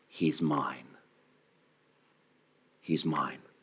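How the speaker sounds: very low, hushed, tender-sweet, drawn-out, dark voice. Speaker recounts a voice they heard that wasn't addressing them, imitating a sweet voice. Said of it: "this voice sounded as sweet as any voice".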